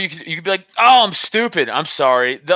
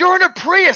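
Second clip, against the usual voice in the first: mock yell, voice way up high and shrill; 14 semitones higher, 3 dB louder than usual. Retelling yelling out at a guy who tried to beat the speaker: retelling own yell. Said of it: "I just started yelling like".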